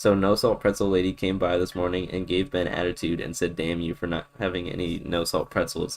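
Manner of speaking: ordinary talk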